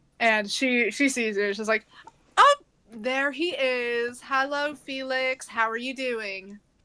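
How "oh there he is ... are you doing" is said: slow, showy, theatrical, flamboyant woman's voice. Narrating a scene, the speaker voices a woman greeting the man being sought: flamboyant woman voice. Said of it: "Rather a rather flamboyant woman".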